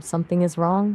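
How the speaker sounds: ordinary talk, nothing marked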